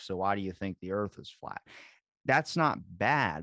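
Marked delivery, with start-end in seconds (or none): 0.0-1.6 put-on condescending, patronizing tone. Giving an example of questioning someone condescendingly, mock-condescending. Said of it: "condescendingly be like".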